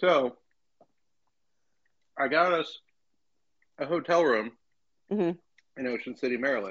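speaking through a mouthful while chewing. Starting a story while eating ice cream, talking with mouth full. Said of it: "I gotta chew my way through this".

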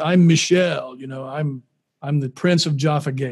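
put-on deep-voiced man's voice. Retelling how a man who saw the oud introduced himself: Michel's deep voice. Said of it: "he just has this deep voice".

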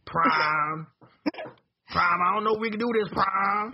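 put-on country voice with southern accent. Talking about Transformers, the speaker addresses Prime in an Ironhide southern accent impression. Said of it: "So I can talk with a southern accent".

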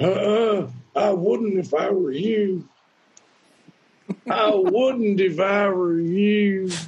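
high-pitched, slow, stretched delivery. Retelling a heckler's warning from the back of a club: imitating a heckler's warning. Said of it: "this is a pretty good impression of what I heard".

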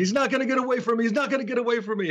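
high, acted screaming, said twice. Retelling how Zulu walked off at the end of a promo: imitating Zulu screaming. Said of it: "he's screaming".

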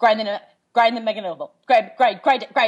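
mock fast, calm, forceful tone. Showing own version of shouting game commands: imitating own fast calm forceful commands. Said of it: "very quickly and very calmly and very forcefully".

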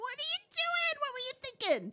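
mock, very high-pitched, swooping yell. Recounting finding a man passed out in a parking lot, the speaker retells yelling at him. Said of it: "And I'm yelling at him".

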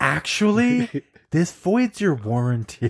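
slow, calm, collected, pleasant tone. Repeating a store employee's reply to an angry customer: imitating a pleasant calm voice. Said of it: "The most pleasant voice, just calm and collected".

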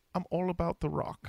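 put-on British accent, high and slow. Saying what a british person would say: put-on british accent. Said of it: "something that a British person would say".

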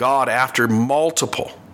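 plain

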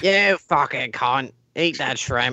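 put-on British accent. Playing a made-up British man, deliver this in a put-on British accent. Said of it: "That was British McEnglish man".

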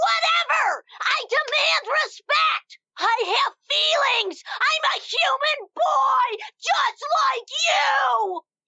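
very high, deliberate, drawn-out yelling. Arguing with a partner who keeps pushing you around: shouting. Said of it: "Use your indoor voice".

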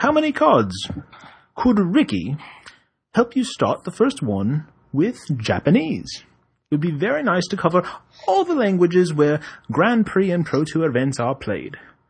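put-on English accent. Reading a request about Magic card translations aloud, English accent. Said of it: "aren't you supposed to read it with an English accent?".

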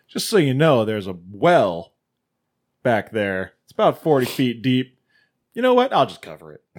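dark, menacing, ominous, foreboding delivery. Quoting what the guy told them, in a mock-ominous tone. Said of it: "very ominously is like".

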